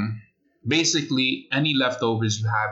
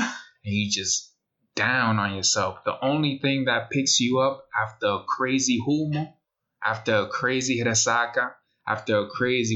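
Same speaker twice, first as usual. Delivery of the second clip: usual speaking voice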